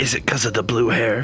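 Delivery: loud stage whisper, not really quiet. Leaning in to ask the question in character: loud stage whisper. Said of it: "lean in and kind of like whisper it, but not really quietly".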